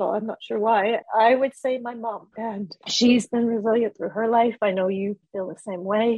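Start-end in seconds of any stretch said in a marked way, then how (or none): 1.2-4.6 emotional, choking up, voice catching. Asked who had the biggest impact on them, emotional, choking up. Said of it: "sorry, I get emotional".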